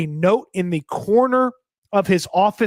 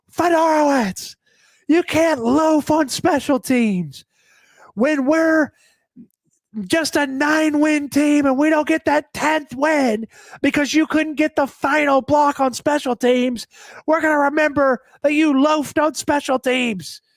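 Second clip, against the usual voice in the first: mock coach voice, yelling, raised and pitched up; 8 semitones higher than usual. Retelling how a player got lit up on the first day of training camp, imitating Mike Vrabel yelling, losing it. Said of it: "He's like losing it".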